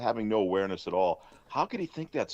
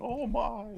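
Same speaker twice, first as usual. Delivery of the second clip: mock frightened old lady voice, higher; 12 semitones higher than usual. Retelling an old lady seeing a stranger: imitating a scared old lady. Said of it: "she was probably scared when she saw him".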